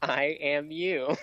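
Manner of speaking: dull, boring-sounding voice. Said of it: "Why do you sound so boring?".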